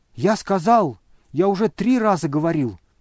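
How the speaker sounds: loud, exasperated, fed-up yell. Burdovsky, refusing the money yet again, irritable shout. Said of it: "раздраженно крикнул Бурдовский".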